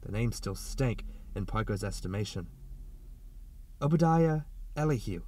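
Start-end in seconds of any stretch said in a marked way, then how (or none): 3.8-5.2 said with reverence. A woman speaks to a man, in a reverent voice. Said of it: "she said in a reverent voice".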